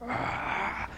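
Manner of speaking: soft, breathy, jealous gasp on ah. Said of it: "It was like".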